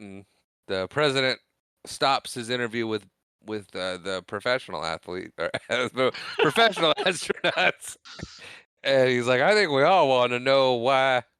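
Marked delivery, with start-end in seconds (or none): 9.4-11.2 put-on, raised Southern American accent. Quoting the president interrupting an interview, in a Southern accent. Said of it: "I'm doing the southern accent that he has".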